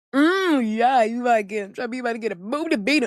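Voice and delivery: acted-out smug, gloating, teasing jeer. Retelling how he grinned and taunted her: imitating a grinning taunt. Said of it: "grins at me like".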